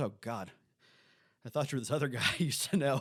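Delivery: put-on panicked voice. Recounting a scene where Boba Fett comes off his ship, mock panic as Mayfield. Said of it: "Mayfield has his little panic moment".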